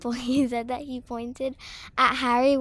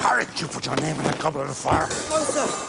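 big, furious voice with the pitch dropped very low; 10 semitones lower than usual. Comparing the movie with the book, speaker acts out Dumbledore: mock-angry, big voice. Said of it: "asked him in a big angry voice".

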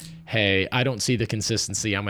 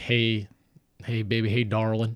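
put-on Southern accent. Acting out a man's early good morning call to his partner: put-on Southern accent. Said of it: "What state are you from today?".

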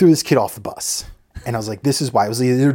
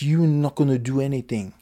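mocking put-on French accent, child's voice; 4 dB quieter than usual. Recalling a fight he broke up, speaker quotes the French kid: imitating a French kid's voice. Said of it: "i can still hear his stupid french fucking voice".

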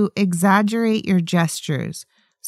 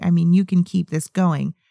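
normal talking voice

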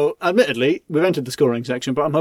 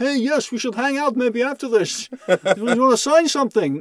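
put-on Dutch accent, pitched much higher; 10 semitones higher than usual. Retelling how charity muggers approach with a petition, imitating a Dutch accent. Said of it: "They always Dutch".

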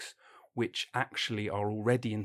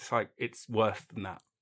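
usual speaking voice

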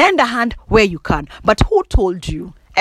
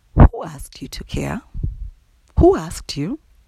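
put-on nice, gentle tone. Retelling a question a best friend asked: imitating a friend's nice tone. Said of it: "try and deliver a nice tone".

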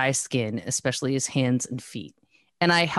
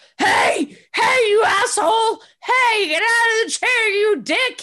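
very high, shrill, loud hollering scream; 6 dB louder than usual. Retelling a man screaming at the cats from the other room, imitating someone screaming at cats. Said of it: "He just screams at them".

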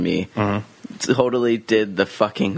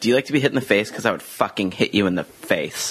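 ordinary delivery

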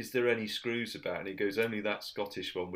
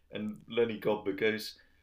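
ordinary talk, nothing marked

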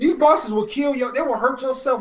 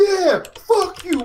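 play-acted high, jubilant triumphant yell; 6 semitones higher than usual. Retelling how you jumped up after finally beating a game boss in your room, retelling a yell. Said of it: "I jumped up and yelled".

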